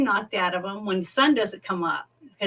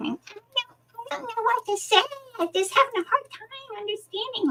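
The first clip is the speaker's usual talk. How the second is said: put-on nasal baby voice, higher pitch. Imitating an actress's voice for friends: Ellen Greene nasally baby talk. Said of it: "She has that nasally baby talk".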